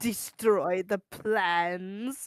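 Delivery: mock evil, put-on sinister delivery. Discussing a villain's line in a game, quoting it with mock evil intent. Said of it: "with such evil intent".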